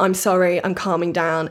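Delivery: ordinary talk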